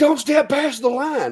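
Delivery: play-acted shrill, screeching scream. Recounting a lady screaming at the speaker near a line: retelling a lady's scream. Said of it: "this lady like screams".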